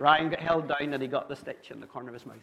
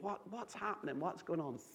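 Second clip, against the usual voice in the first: acted tearful, frightened pleading in crying child voice; 3 semitones higher, 11 dB quieter than usual. Retelling a young child held down for a stitch: imitating a pleading crying child. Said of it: "and he's pleading".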